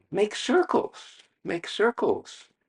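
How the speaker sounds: teacher voice, high-pitched, slow and coaxing.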